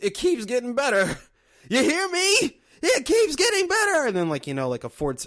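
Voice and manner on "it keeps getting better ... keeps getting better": put-on very high, loud, swooping old man's holler. Retelling a horror-style ad's old man in a rocking chair: imitating an old man yelling. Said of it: "old man in a rocking chair who's just, like, you know, yelling".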